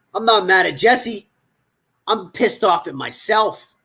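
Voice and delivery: ordinary talk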